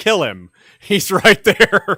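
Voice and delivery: loud, high, slow yell while laughing. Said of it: "he yells".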